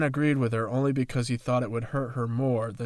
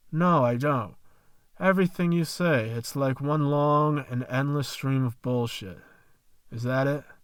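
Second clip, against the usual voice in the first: usual speaking voice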